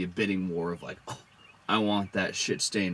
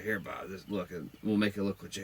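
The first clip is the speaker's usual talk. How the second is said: put-on muttering under the breath; 4 dB quieter than usual. Retelling an aside made while paying someone: imitating muttering under breath. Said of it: "under my breath as I'm paying Bob".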